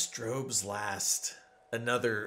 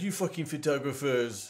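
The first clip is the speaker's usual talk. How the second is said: put-on, fake French accent; 4 semitones higher than usual. Quoting a French man who thought the speaker kept breaking things, put-on French voice. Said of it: "That's what my French voice sounds like".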